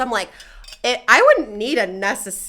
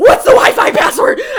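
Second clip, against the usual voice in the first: top-of-the-lungs, very loud, very high shrill scream; 12 semitones higher, 10 dB louder than usual. Telling about a night at a bar with no wi-fi, retelling screaming at the bar. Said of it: "I'm literally screaming at the bar".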